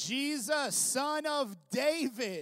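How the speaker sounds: pleading, desperate cry at full voice, high, very loud. Retelling blind Bartimaeus calling out to Jesus: imitating a loud shout. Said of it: "he shouts louder".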